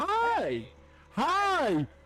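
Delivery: very high, cheerful forced-smile voice, sing-song, drawn-out hi. Playing through a run again, greeting in a put-on smiling character voice. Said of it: "I once again have to use this voice".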